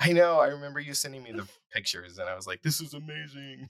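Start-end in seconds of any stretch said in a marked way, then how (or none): 2.6-3.7 soft, goofy, silly put-on voice. Recalling the reaction to pictures of a friend's painted background, in a silly put-on voice. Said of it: "I don't know what that voice was".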